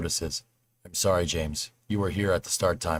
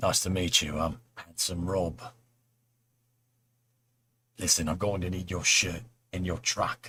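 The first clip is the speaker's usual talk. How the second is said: put-on British accent. Doing an impression on request: Jason Statham voice with British accent. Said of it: "Throw some British accent in, you sound like Jason Statham".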